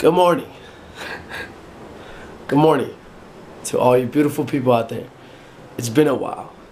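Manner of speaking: groggy, sleepy just-woke-up voice. Greeting the audience in the morning, just-woke-up voice. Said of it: "as you guys can tell, probably by my voice, that I just woke up".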